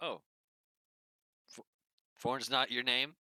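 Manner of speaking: high-pitched, loud, deflated, crestfallen, let-down dismay. Voicing a character who learns the signed name is wrong: crestfallen. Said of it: "like he's crestfallen".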